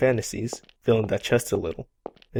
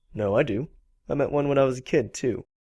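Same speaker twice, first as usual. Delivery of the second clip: teasing, mocking, sarcastic play-along tone; 4 semitones higher than usual. Answering someone who asks if he believes in fairies: sarcastic. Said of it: "you know he's being sarcastic".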